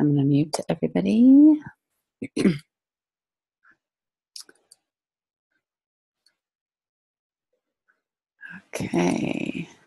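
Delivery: speaking softly and low. Starting a group call while a baby sleeps nearby, talking low. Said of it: "I'm talking a little bit low because the baby is sleeping".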